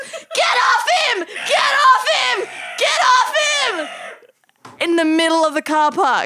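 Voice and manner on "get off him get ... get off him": put-on very high, shrill, drawn-out screaming. Retelling screaming at seagulls in a packed car park: imitating screaming at seagulls. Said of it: "I start screaming at one of the seagulls".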